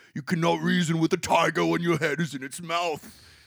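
put-on grave old statesman impression. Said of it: "obviously I'm doing the voice for Churchill".

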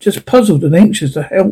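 ordinary delivery

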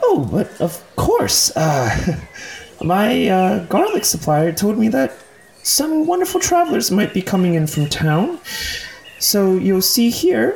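put-on gnome voice, very high. A gnome at a roasted garlic stand greets arriving travelers; gnome garlic vendor voice. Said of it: "a gnome, notably less old than Ivan. There's a gnome manning a roasted garlic stand".

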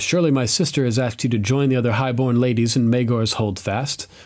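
ordinary talk

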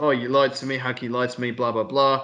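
plain

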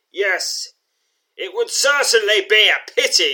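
piercing yell, very high and very loud. Narrator reading Bernick answering a demand to surrender, shouting. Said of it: "shouts Bernick".

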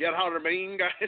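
put-on Irish accent. Repeating the other speaker's line as Finn Balor would: Irish accent imitating Finn Balor. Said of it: "with an Irish accent".

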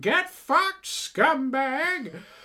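put-on very high, shrill, loud old hag witch voice. Retelling an inside-joke shout at a driver who cut in, old hag witch voice. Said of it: "like, old hag witch voice".

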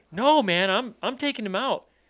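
acted raw, high, loud scream. Retelling a hunting trip where an armed stranger threatens a father: imitating someone screaming. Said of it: "Screaming, screaming, screaming".

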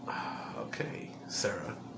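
soft, unvoiced whisper, muttered under breath.

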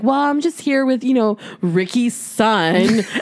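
disdainful, contemptuous tone, dripping with disdain. Retelling what a woman said about who she was with; mock-disdainful tone. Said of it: "The disdain in her voice".

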